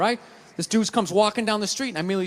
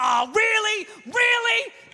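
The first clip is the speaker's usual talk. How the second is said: put-on, very high, exasperated, fed-up disbelief; 13 semitones higher than usual. Speaker recalls reacting when their computer crashed, retelling exasperated frustration. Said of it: "would crash and be like".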